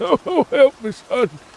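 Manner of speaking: very high, slow put-on old man voice. Showing off voice-acting skills, doing a put-on old man voice. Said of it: "the old man voice is not hard".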